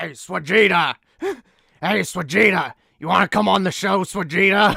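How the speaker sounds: very loud, high, big anime-style shout. Calling a past collaborator onto the show, in a Nappa voice. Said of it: "I was trying to do a Dragon Ball. Yeah, Nappa".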